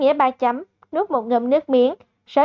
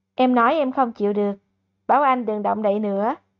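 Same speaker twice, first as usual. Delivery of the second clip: ordinary delivery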